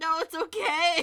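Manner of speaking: loud, groaning delivery. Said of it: "loudly groaning and trying to run".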